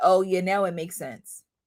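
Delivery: mock-haughty, snobby, sarcastic tone. Retelling a remark made in a snobby, sarcastic way: mock snobby sarcasm. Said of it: "like in a snobby, um, sarcastic way".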